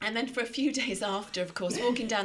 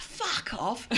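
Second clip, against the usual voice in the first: put-on North London accent; 3 semitones higher than usual. Showing the accent the speaker thought they had, in a North London accent. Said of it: "the North London".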